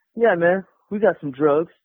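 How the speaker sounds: ordinary delivery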